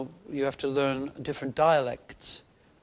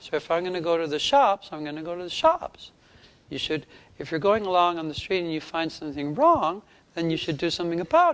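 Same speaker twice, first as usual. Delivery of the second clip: pitched up with sharp spikes on each stress; 4 semitones higher than usual. Showing how a film character's voice was built: Jordan Peterson impression. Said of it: "I imitated a man called Jordan Peterson".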